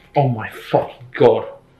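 very scared. Reacting right after a scary game moment: terrified. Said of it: "I'm fucking terrified".

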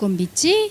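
usual speaking voice

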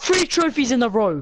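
all-out, high-pitched screaming. Boasting to friends about catching trophy fish: screaming. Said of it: "keep screaming like that".

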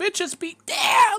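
very high, loud yell cracking midway. Game master narrating a character's attempted yell on the road: yell with voice cracking. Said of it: "your voice cracks in the middle".

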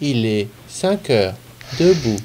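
very low, small, metallic synthetic robot voice. Describing a weather app's wake-up message, imitating its metallic app voice. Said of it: "une petite voix métallisée qui vous fait".

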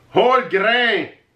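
put-on speaking with a French accent. Joking with a co-speaker, saying English words in a French accent. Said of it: "I'm doing a French accent".

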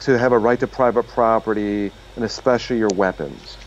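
normal talking voice

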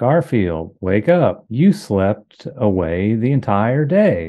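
unnatural, stiff, slow, stilted read-aloud. Imitating the boss reading a comic strip aloud: imitating a boss's unnatural read-aloud. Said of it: "let me find a Garfield strip and I'll read it out loud through the way he would read".

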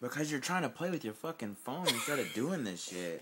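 irritated, fed-up, angry and frustrated voice. Arguing while the other speaker cleans the wound: getting angry. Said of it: "I'm clearly getting fucking mad".

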